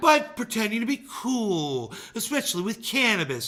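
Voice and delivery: exaggerated, over-the-top newscaster voice. Repeating another speaker's line, playing the part of a hyperbolic newscaster. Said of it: "play the part of the hyperbolic newscaster".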